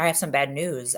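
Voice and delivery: ordinary talk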